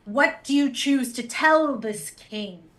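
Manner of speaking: intimidating, commanding, sorcerous spell-casting voice. Voicing a character spinning toward riders to intimidate them: booming thaumaturgy voice. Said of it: "that thaumaturgy voice".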